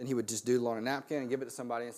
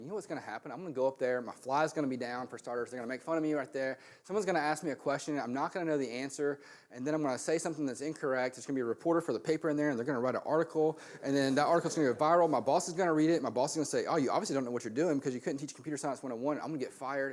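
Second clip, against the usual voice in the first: ordinary talk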